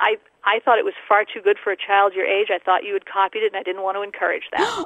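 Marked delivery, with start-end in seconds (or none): none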